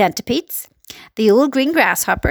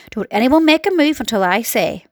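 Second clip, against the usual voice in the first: ordinary delivery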